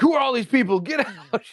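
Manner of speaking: very high, loud yelling. Retelling how Chunky yelled during a chat raid: imitating Chunky yelling. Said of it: "yelling in the middle of the chats".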